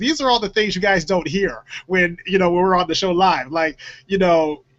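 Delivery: ordinary talk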